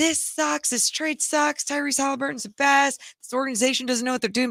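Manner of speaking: put-on yelling, complaining rant. Retelling what a man yelled at him during a commercial; imitating someone yelling. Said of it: "just yelling at me like".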